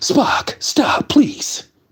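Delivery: stilted, read-off-the-page, script-reading delivery. Imitating a stilted line read to Spock: William Shatner impression. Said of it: "William Shatner used to act as if he was reading the script".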